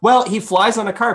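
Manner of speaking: high, facetious, tongue-in-cheek quip. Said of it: "I said that kind of facetiously".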